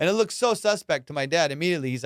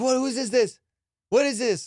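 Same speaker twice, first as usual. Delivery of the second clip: pissed-off angry father voice, pitched up; 6 semitones higher than usual. Telling a story about his dad from when they were kids, imitating an angry dad. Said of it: "my dad was just like so pissed".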